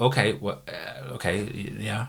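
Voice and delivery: ordinary talk, nothing marked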